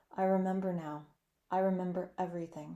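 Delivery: normal talking voice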